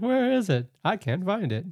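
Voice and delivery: high-pitched, slow, unhurried, disappointed voice. Retelling that the contestant couldn't find the caramel: imitating Paul. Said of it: "that's my impression of Paul".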